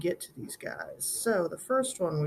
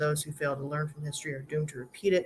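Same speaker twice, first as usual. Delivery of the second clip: usual speaking voice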